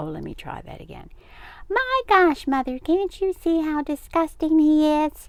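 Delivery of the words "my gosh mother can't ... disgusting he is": shrill, squeaky mocking voice pitched way up. [name] mimics someone pleading with Mother, in a high, squeaky mimicking voice. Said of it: "mimicked [name] in a high, squeaky voice".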